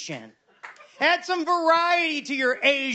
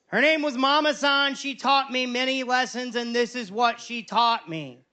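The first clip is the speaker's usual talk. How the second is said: usual speaking voice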